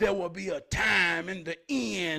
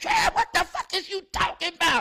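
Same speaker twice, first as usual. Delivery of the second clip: very high, squeaked-up grandma voice; 11 semitones higher, 4 dB louder than usual. Telling a story, acting out how your grandma would answer you; imitating grandma. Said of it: "My grandma gonna say".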